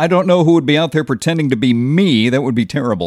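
ordinary delivery

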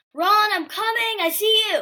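high-pitched scream. Retelling a film scene where a character calls out: imitating a scream.

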